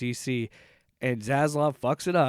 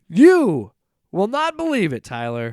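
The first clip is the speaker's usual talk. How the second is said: very loud, booming, swooping game-show announcer voice; 6 semitones higher, 8 dB louder than usual. Introducing the next topic to Tyler as a segue: game show host voice. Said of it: "I wanted to make it sound like a game show".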